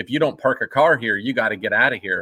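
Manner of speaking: ordinary delivery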